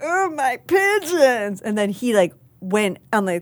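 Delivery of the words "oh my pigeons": put-on puppet voice, much higher pitch. Guest recounting trying a voice in front of someone, Bert voice. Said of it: "I tried to do Bert".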